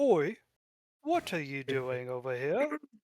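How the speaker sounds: lofty, regal voice with swooping pitch. Voicing a cultist in purple who spots the dwarf: more regal cultist voice. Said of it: "it'd be more regal than that".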